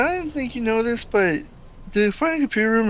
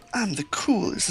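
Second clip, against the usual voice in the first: put-on weird hedgehog villain voice; 4 dB quieter than usual. Describing how a game character's voice sounded, imitating Shadow. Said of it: "he'd just be like".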